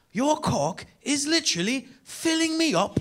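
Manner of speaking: put-on very high, slow, drawn-out British accent. Telling the crowd what a woman said after inviting you to her hotel room, in a British accent. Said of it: "she said the dopest thing I've ever heard in a British accent".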